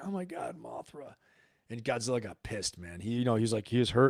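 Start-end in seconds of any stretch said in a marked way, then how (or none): 0.0-1.1 mock hushed, slow, choked-up whisper. Recalling a monster movie watched last night: retelling getting choked up. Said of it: "I was like getting choked up".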